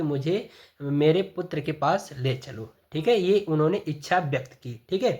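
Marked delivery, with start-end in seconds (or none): none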